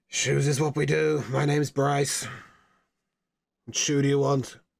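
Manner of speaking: grumpy put-on dwarf voice. Voicing a dwarf who sells shoes to a customer, grumpy dwarf Bryce voice. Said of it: "most grumpy dwarf looks up at you".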